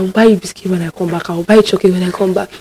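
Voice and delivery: acted, hushed, soft, desperate pleading. Recounting struggling to leave the house, the speaker re-enacts it, retelling begging. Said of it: "I was begging him".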